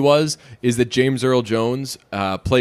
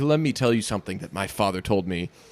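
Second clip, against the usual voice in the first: wise voice with hard-won wisdom behind it; 4 semitones lower, 6 dB quieter than usual. Showing how the line was originally said: Mufasa impression with wisdom behind it. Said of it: "that's how he said it".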